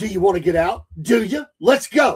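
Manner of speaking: put-on angry tone. Retelling what a man said to people getting out of a car, imitating an angry challenge. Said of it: "he's just going off".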